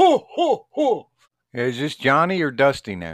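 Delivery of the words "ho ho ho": high-pitched ho ho ho laughing. Supplying a sidekick's laugh on cue: Ed McMahon laugh impression. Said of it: "Now we just need Ed McMahon to laugh".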